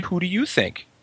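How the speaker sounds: heavy put-on Czech accent. Retelling what a guy from the corporate asked: imitating a thick Czech accent. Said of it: "in a thick Czech accent".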